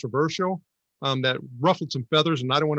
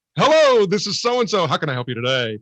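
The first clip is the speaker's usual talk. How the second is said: put-on radio announcer voice, on-air broadcast style; 2 semitones higher, 4 dB louder than usual. Retelling radio voice contests while helping customers: imitating a radio voice. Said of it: "radio voice contests".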